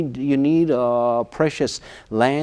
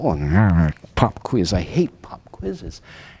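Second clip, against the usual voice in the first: mumbling quietly to oneself; 8 semitones lower than usual. Retelling sitting in class when the teacher announces a pop quiz: imitating own mumbling. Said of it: "I'm mumbling to myself".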